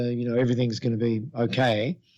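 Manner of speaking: ordinary talk, nothing marked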